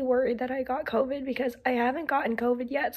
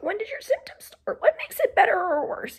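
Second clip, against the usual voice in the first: hoarse, croaky, pitched-up voice nearly giving out; 7 semitones higher than usual. Acting out questions to patients while losing the voice: hoarse, losing voice. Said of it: "I'm also losing my voice".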